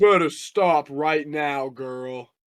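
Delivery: very loud, booming, belted-out voice. Acting out what Huda said when she turned around, in a really deep Huda voice. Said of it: "Huda has a really deep voice".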